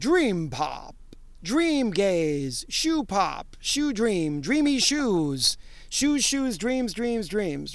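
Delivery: slow put-on announcer-style voice. Doing it in the announcer voice, as at the beginning: announcer voice. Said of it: "I'm going to do this in the announcer voice".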